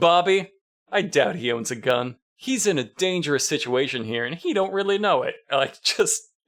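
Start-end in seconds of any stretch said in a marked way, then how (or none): 0.0-5.4 very condescending, patronizing, mock talking-down tone. Retelling how Trapper talks to Bobby; mock-condescending, as Trapper. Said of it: "Trapper says very condescendingly".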